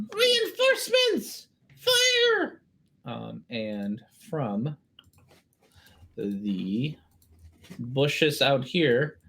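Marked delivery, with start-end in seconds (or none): 0.1-2.6 small voice shouting, higher. Voicing someone hidden inside the cart calling for reinforcements: little voice yelling. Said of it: "You hear from inside a little voice say".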